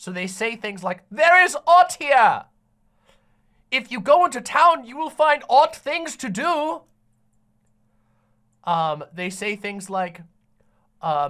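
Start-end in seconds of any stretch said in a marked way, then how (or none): 1.1-6.8 loud, raised, put-on archaic Old English speech. Imitating how the game's characters talk: fake Old English game dialogue. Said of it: "all of the characters talk in fake Old English".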